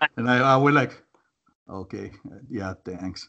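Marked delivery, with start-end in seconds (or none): 1.7-3.3 hammed-up, overdone, put-on seductive voice. Retelling own reply to her compliment on a call: imitating own overdone sexy voice. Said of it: "I actually overdid my sexy voice".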